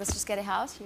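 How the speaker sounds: ordinary talk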